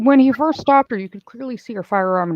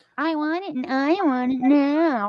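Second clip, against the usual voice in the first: put-on bratty spoiled-girl whine, high and drawn out; 5 semitones higher, 3 dB quieter than usual. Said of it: "that's literally what you sound like".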